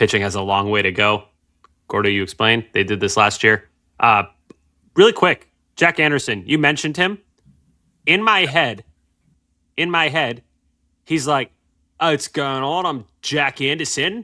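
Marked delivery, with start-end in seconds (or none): 12.0-14.1 put-on British accent leaning Australian. Showing how a player sounds in one's head: imagined British accent for Jack Anderson. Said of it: "that was more Australian, but he speaks with a British accent in my head".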